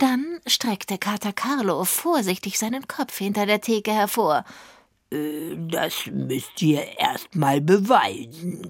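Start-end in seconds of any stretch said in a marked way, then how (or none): 5.1-8.7 very slow, very low growled. Reading Kater Carlo's reply as he peeks out from behind the counter; growling. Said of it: "knurrte er".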